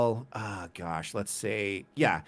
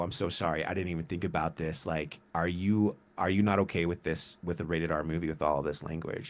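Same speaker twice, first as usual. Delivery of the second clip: put-on whisper, lower and quieter; 5 semitones lower, 5 dB quieter than usual. Retelling leaning over to someone during a movie: retelling a whisper. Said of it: "and I whisper".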